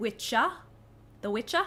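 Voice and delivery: put-on Australian-accented speech. Repeating how a colleague pronounced 'The Witcher': Australian accent. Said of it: "because that's how you say it in Australia".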